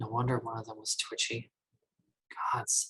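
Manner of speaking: soft, hushed half-whisper under the breath. Playing a character recalling attacked travellers: half-whispering softly to herself. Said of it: "whispers to herself really softly".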